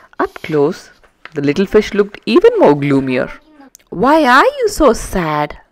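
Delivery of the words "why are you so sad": caring, concerned, high voice, very slow and drawn out. Dashy asks the gloomy little fish: concerned. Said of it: "Dashy asked with concern".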